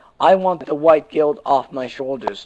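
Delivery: ordinary talk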